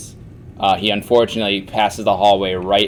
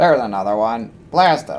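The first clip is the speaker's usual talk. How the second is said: mechanical, droid-like robotic voice; 2 semitones higher than usual. Describing what the characters hear, the narrator speaks in a robotic voice. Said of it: "robotic voice be like".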